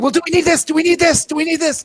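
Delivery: high, anxious, fretful voice.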